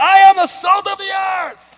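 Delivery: very loud, high delivery with full gusto. Showing one of the ways you have tried to say this line, with a bit more gusto. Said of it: "I've tried to say it with a little bit more like gusto".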